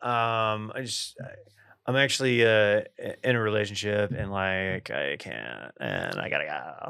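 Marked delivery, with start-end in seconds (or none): 1.9-6.9 slow, creaky, fry-heavy dismissive voice. Demonstrating how to cut off a conversation, creaky vocal fry. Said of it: "That's how I would say it. / You use vocal fry to cut it off".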